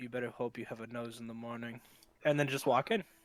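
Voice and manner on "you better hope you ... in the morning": leaning-in, quiet, menacing voice under the breath. A player has their character lean in really close before walking in: muttered under breath. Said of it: "under my breath go".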